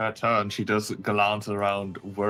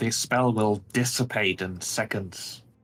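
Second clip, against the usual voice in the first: spoken as a steady, hissed voice. Voicing a surrendering character to the players, hissing. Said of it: "she hisses".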